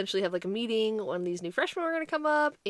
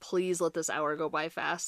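mock exasperated fed-up tone, lower; 4 semitones lower than usual. Retelling a teen rolling her eyes at youth group: imitating someone fed up. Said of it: "just so done already".

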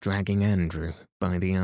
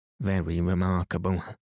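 plain reading voice

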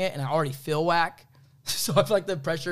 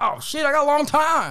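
put-on loud, very high old-timer Southern accent; 12 semitones higher, 7 dB louder than usual. Imagining someone told they'll die at 178, reacting in an old southern voice. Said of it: "Why'd you get old and southern all of a sudden?".

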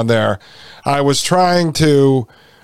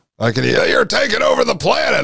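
rough, high-pitched screaming like through a bullhorn; 4 semitones higher than usual. Describing a man with a bullhorn outside David Rockefeller's house, Alex Jones screaming impression. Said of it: "start screaming".

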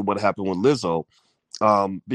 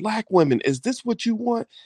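put-on screaming rant, higher pitch; 12 semitones higher than usual. Retelling a man's outburst over a bus advertisement: imitating someone screaming. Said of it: "starts screaming and cussing and yelling".

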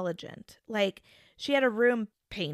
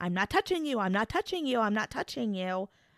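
put-on teasing, repetitive childish taunting voice. Imitating a little brother holding a finger close to someone's face: imitating a teasing little brother. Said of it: "your little brother will hold his finger close to your face and be like".

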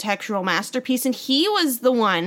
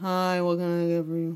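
put-on unenthusiastic voice, lower and quieter; 4 semitones lower, 5 dB quieter than usual. Imitating how a worker greets people: imitating Jake, unenthusiastic. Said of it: "up the enthusiasm, my dude?".

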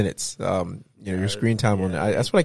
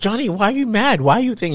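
mock over-acted sincerity, higher and louder; 12 semitones higher, 5 dB louder than usual. Retelling a filmed argument, mimicking a woman acting badly: imitating over-acted fake sincerity. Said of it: "she's like the worst actor trying to be real".

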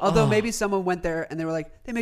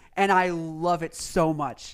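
ordinary delivery

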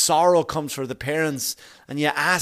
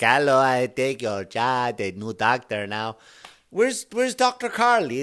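terrible put-on Jamaican accent, sing-song; 3 semitones lower than usual. Retelling turning around in the chair and taking over, in a bad jamaican accent. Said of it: "That's a terrible Jamaican accent".

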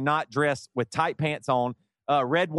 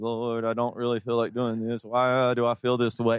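put-on barely audible muttering under breath, slower; 4 semitones lower than usual. Speaker reenacts praying to the lord with people on either side, retelling muttering under breath. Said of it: "So I just was going under my breath".

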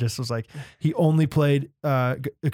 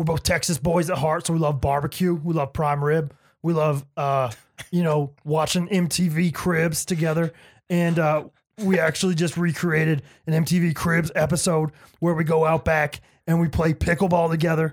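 gravelly put-on impression voice; 3 semitones higher than usual. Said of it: "That was actually a really good impression".

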